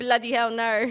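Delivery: put-on British accent. Saying goodbye to a friend leaving for chicago, in a british accent. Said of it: "so good at British accents".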